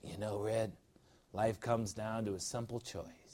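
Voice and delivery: very soft, hushed put-on Japanese accent. Quoting a movie character's line to listeners, in a Japanese accent. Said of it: "So that's my Japanese accent".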